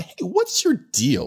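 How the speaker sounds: high, slow baffled call. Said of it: "you start going".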